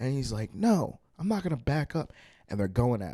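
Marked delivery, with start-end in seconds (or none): 0.5-2.1 angry, high-pitched screaming. Telling of a man and woman arguing, imitating him screaming in her face. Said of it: "he's like screaming in her face".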